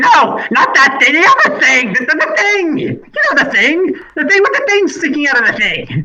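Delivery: fed-up, exasperated scolding rant, very high, shrill, swooping. Smacking the flesh golem, Maggie scolds it, with exasperated scolding. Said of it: "just starts smacking the flesh golem, saying".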